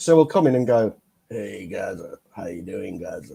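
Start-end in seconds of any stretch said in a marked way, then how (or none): 1.3-3.3 put-on gravelly voice, lower and quieter. Imitating a guest who joined a stream panel: imitating a gravelly voice. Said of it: "he's got that gravelly voice".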